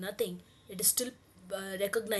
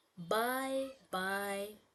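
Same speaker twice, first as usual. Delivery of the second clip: little soft tone, gentle and quietly spoken. Recording voice samples of one word, this time in a little soft tone. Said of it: "in a little soft tone this time".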